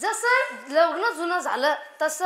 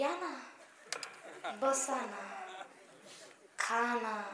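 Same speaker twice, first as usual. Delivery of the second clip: much softer, hushed voice. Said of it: "ती एकदम हळू बोलते".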